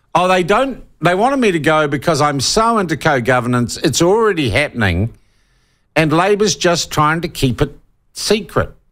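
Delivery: ordinary delivery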